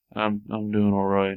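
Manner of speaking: quiet, flat put-on voice. Retelling a dream conversation, quoting Robin Williams's reply, Robin Williams, flat monotone. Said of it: "Just very, like, monotone sound".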